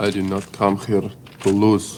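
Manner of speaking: put-on Russian accent in English. Commentator quoting a man who just sipped water, in a Russian accent. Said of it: "that's the best Russian accent he's done".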